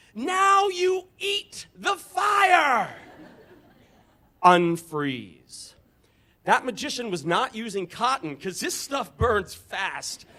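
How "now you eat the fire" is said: very high, very slow shrill shriek, stretching out fire. Retelling a thought of Rumpelstiltskin dancing around: high-pitched Rumpelstiltskin shriek. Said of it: "in his high-pitched voice, he shrieks".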